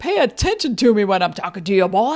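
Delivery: big barnyard cartoon rooster voice. Retelling a line said to someone, imitating Foghorn Leghorn. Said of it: "Dad, you're doing a foghorn".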